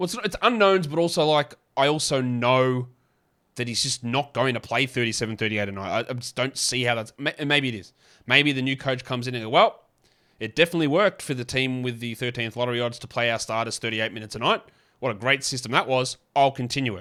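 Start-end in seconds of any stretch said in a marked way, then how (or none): none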